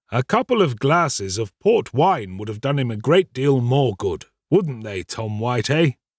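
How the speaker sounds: plain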